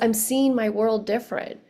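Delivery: ordinary talk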